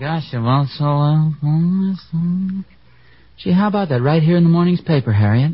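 unclear, indistinct muttering. Talking about the morning's paper to Harriet: mumbling. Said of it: "you're just mumbling".

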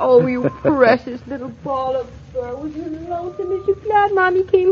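put-on doting baby talk. A woman home again speaks to her cat, in baby talk to a cat. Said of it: "talks baby talk to a cat".

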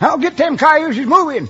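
high-pitched, loud, barking yell. Retelling a holdup to a questioner, imitating a robber yelling. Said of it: "Then the first voice yells".

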